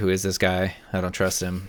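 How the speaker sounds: ordinary talk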